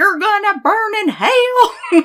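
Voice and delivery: put-on Southern accent, loud, very high-pitched. Retelling what a man said, in one of those typical southern accents. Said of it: "he was doing one of those typical southern accents".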